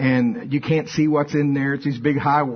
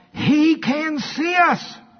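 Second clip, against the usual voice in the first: mock very high, slow, drawn-out, siren-like scream; 13 semitones higher than usual. Recounting how a woman carrying her baby spotted the speaker: retelling a terrifying shout. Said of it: "She shouted like it was the most terrifying shout".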